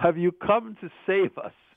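put-on Eastern European accent. Recalling a man who greeted him at a school, the speaker imitates an Eastern European accent. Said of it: "He had an Eastern European accent".

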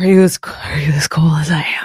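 hidden mutter under the breath. The game master voices a character speaking to a player, muttered under breath. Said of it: "under his breath, trying to hide it".

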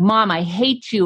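ordinary talk, nothing marked

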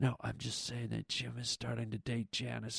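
secretive, hushed whisper, very quiet and low. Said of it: "goes into whisper mode".

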